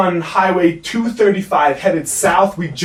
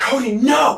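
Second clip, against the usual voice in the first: put-on scream, higher pitch; 6 semitones higher than usual. Retelling a passenger in the back seat screaming, imitating someone screaming. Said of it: "Julie's in the back of the car screaming".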